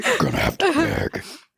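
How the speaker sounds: devilish taunting voice. Repeating the other speaker's teasing line back: imitating the "I'm the devil" voice.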